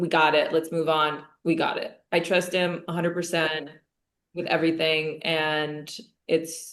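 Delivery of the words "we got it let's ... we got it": usual speaking voice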